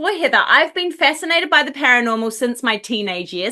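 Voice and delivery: ordinary talk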